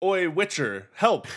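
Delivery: sudden high-pitched shout. A game narrator voices the viceroy calling out to the witcher, shouting. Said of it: "and the viceroy just shouts".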